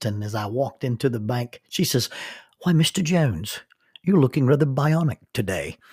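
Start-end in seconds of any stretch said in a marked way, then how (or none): 2.6-5.7 put-on, charming British or New Zealand accent. Retelling what the bank teller said on walking in: put-on British or New Zealand accent. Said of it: "either British or New Zealand accent".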